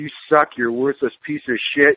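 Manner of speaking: put-on in-your-face drill sergeant voice. Retelling what a drill sergeant said, up in a recruit's face: imitating an in-your-face drill sergeant. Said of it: "a drill sergeant got in their grill and said".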